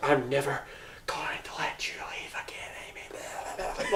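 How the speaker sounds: slow, breathy, put-on creepy whisper. Retelling a movie scene, quoting a character: imitating a creepy character. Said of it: "I added the tone".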